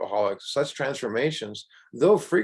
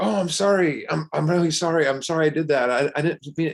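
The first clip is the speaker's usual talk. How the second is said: play-acted earnest, begging, pitched-up pleading; 5 semitones higher than usual. Retelling a friend's apology after a wrong turn: imitating a friend pleading. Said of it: "he was almost pleading with me".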